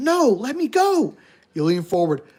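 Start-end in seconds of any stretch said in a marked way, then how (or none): 0.0-1.2 very slow, sobbing, pitched-up crying shout. Voicing a crying boy on a phone line: boy shouting while crying. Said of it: "He's shouting".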